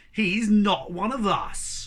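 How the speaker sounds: very slow, drawn-out growled delivery. Reading a story aloud, a cat rejecting another cat: growling. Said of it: "growled Julius".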